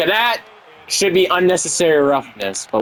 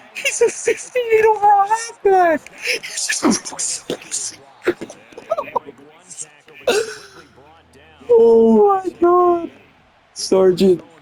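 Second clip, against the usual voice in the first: very high, breathless speech breaking up in laughter. Reacting to a funny play in a football game, laughing hard while talking. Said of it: "I can't breathe".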